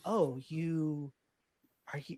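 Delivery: soft, secretive, hushed half-whisper. Recounting what a game character said on meeting them, half-whispering. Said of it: "And he kind of whispers this".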